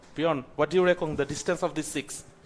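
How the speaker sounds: ordinary delivery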